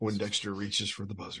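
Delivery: put-on televised golf announcer voice. Imagining Jim Nantz calling a quiz bowl: Jim Nantz golf voice. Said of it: "in his golf voice".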